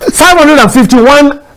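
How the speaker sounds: shouting. Repeating the number of applications after apologizing: shouting. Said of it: "You are still shouting".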